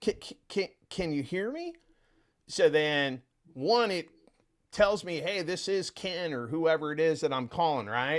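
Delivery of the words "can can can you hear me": hesitant, confused stammering, pitched up. Caller showing how he opens his calls to leads, acting confused. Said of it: "I sound confused".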